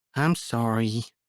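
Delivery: small, breathy, half-whispered voice. Reading a story where a scolded girl apologizes: half-whispering. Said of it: "She hung her head and whispered".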